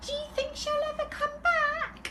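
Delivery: tiny, very high, hopeful voice. Narrator reads Baby Bear asking Mummy Bear about the girl: hopeful Baby Bear wee tiny voice. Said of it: "asked hopefully in his wee tiny voice".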